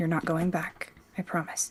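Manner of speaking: speaking very quietly, hushed voice. Playing a character who reassures another on the walk: speaking very quietly. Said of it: "just really quietly so that only Tira can hear".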